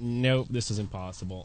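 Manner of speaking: normal talking voice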